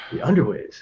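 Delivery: very serious. Voicing a lord in a game scene who asks something: very serious. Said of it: "he seems very serious and he goes".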